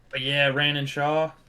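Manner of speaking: strong Southern US accent. Chatting with co-hosts, speaking in a southern accent. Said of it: "You said that so southern".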